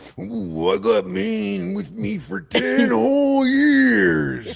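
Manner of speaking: very high, rough, put-on wrestler-promo voice. Mock a man whose voice seems fake and put on, imitating a wrestler cutting a promo. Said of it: "I know a wrestler cutting a promo".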